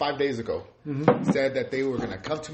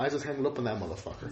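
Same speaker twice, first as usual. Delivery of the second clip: ordinary talk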